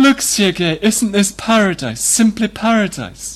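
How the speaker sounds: high, exclaiming voice. Narrator reads Katerina Lvovna calling Sergei to look at the sky: exclaimed. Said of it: "Katerina Lvovna exclaimed".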